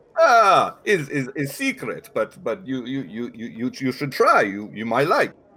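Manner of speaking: put-on vaguely Russian accent. A game master voicing a character answering a player's question about the food, vaguely Russian accent. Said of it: "I am using a vaguely Russian accent".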